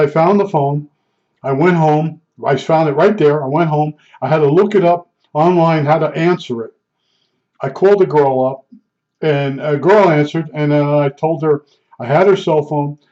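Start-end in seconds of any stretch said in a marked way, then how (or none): none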